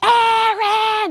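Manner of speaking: acted out, very high, long, stretched scream. Telling how he lunged forward on the balcony and shouted a name, retelling a scream. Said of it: "he begins to scream from the balcony".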